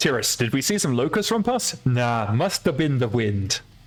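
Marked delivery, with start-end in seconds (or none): 1.9-3.6 put-on guard voice with Nordic accent. Answering another player's question during a game, in a Skyrim accent. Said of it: "That was my best Skyrim accent".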